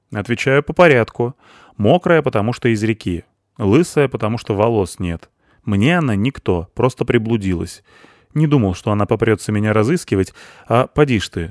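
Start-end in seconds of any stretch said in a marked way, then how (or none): none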